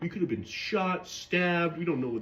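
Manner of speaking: acted-out reproachful, aggrieved complaining. Retelling how friends complained afterward: imitating friends complaining. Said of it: "they were complaining at me".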